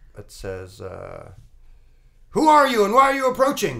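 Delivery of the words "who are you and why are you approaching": blaring, very high, very loud loudspeaker announcer voice. Voicing someone on a boat hailing the approaching party: voice over a loudspeaker. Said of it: "a voice comes over the loudspeaker".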